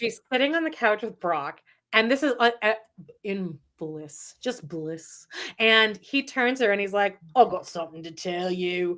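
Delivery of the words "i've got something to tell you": put-on Australian accent, lower pitch. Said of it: "he's Australian".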